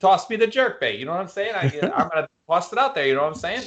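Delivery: put-on Midwest-Boston accent. Imagining the guy the speaker would turn into, in a Midwest Boston guy accent. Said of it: "I get the Midwest Boston guy".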